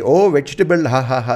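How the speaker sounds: taunting, jeering put-on Indian accent, w for v. Retelling how people mocked saying vegetable: imitating mockery of an Indian accent. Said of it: "they would make fun of the Indian accent".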